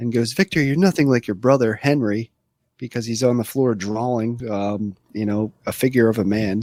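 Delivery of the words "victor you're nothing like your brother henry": put-on rude voice. Retelling a movie scene where a father scolds his son: imitating a rude father. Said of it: "he's all rude".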